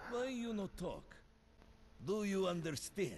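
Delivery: put-on thick Russian accent on English. Speaker answers another voice, switching to English: Russian accent. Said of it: "Russisk accent".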